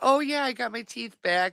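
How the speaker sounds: put-on breezy, offhand tone. Imitating the other speaker's earlier words: imitating a nonchalant tone. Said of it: "She just sounds so, like, nonchalant".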